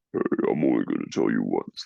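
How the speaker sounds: very deep, low, big-chested voice. Recalling an actor with a distinctive voice, imitating a deep voice. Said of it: "it's such a deep".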